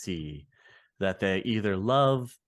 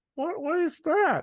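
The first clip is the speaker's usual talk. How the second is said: squeaky, very high voice jumping octaves; 3 dB louder than usual. Asking the other speaker a setup question: voice shifted a couple octaves. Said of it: "my voice shifted a couple octaves".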